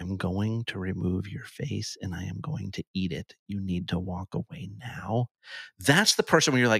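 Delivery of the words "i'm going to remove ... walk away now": calm, soft, quiet menace, spoken close and low-key. Describing a guy who leans in to your ear, imitating him quietly. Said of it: "leans over in your ear and quietly goes".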